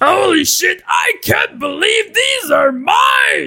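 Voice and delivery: puppet-style cartoon voice. Redoing a character's line for the woman, in a Muppet-like voice. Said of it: "That's just Muppet Val".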